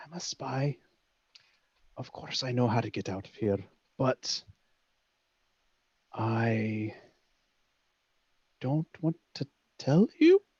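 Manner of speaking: leaning-in half-whisper, with long drawn-out "I". Voicing a character who leans in and confesses to spying: half-whispering in character. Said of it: "he kinda leans in and whispers".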